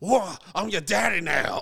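unhinged, loud, high-pitched screaming outburst. Retelling a scene from the movie Heat, imitating Al Pacino screaming. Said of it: "he just screams at".

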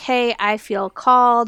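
ordinary talk

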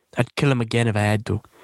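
bad, fake, horrible put-on British accent. Quoting a character's line while recapping a show, in a horrible British accent. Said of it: "that's a horrible British accent".

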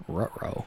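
soft muttered aside under the breath. Voicing a character who turns his back: muttered under his breath. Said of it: "does under his breath say".

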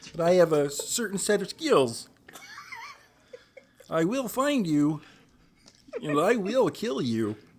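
loud, high, stretched out. Quoting a movie line as requested in a Kermit the Frog impression. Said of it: "doesn't exactly sound like Kermit the Frog".

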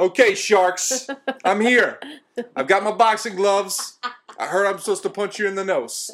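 put-on Jersey accent. Joking about swimming out to punch sharks, in a put-on Jersey Shore-ish accent. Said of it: "I couldn't tell if you were from Jersey Shore or from whence you came with that accent".

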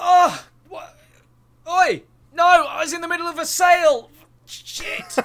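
very high, loud, drawn-out panicked scream. Voicing a fallen man in a fantasy game: screaming bloody murder. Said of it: "he screams bloody murder".

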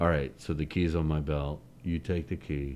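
reserved, subtle delivery.

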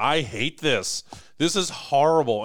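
loud, hollered, drawn-out yell. Recalling pitchforking and yelling at the group: retelling a yell. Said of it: "I'm literally yelling at all you guys going".

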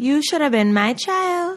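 put-on Trinidadian accent. Trying again to quote a soca artist who always says this: attempted Trinidadian accent. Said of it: "I can't do the accent".

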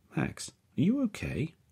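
worried, concerned tone, pitched very high. The narrator turns to Max, who sits silent and unmoving, concerned. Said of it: "now concerned".

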